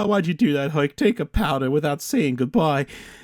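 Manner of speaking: mock-sad put-on voice. Retelling the end of Hercules, voicing a character upset Herc left: imitating a sad movie character. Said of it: "Pretzi's all sad".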